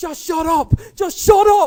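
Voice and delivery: very high, loud, shrill, drawn-out panicked yell. Retelling a friend stalling a car mid-road: imitating Mark panicking. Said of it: "just panicking, going".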